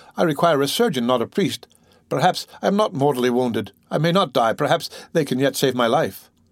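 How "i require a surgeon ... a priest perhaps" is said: ordinary delivery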